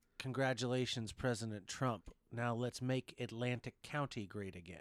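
ordinary talk

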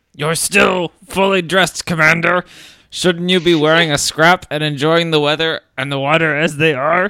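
booming it out loudly in a high voice. Reading a story aloud, the Admiral speaks to the Commander: Admiral Ackbar voice. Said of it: "It's the worst but best Akbar I've ever heard".

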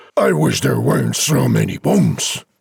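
grouchy, grumpy, grumbling complaining tone. Reading a rhyming story aloud, deliver a character's line in grumpy tones. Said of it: "and this in grumpy tones".

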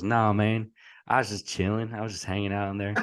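put-on Memphis accent laid on thick. Retell how a Netflix star answered you during fall camp, in Marcus's thick Memphis accent. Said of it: "he's got this thick Memphis accent".

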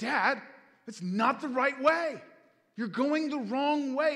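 put-on high, loud, childlike crying yell. A father retells his son Ezra yelling at him from the car, imitating Ezra yelling. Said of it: "he is yelling".

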